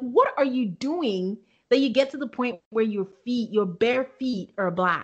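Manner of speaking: usual speaking voice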